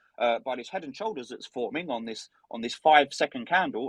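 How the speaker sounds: ordinary delivery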